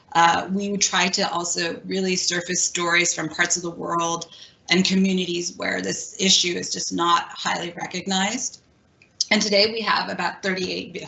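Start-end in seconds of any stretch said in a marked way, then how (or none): 9.3-11.0 voice cracking mid-phrase. Giving a project update after apologizing that the voice is cracking: voice cracking. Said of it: "my voice is cracking".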